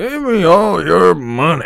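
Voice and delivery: put-on drunk, slow voice. Describing compilations of Arthur drunk and robbing people, the speaker acts him out: imitating drunk Arthur. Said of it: "when Arthur is drunk and stuff".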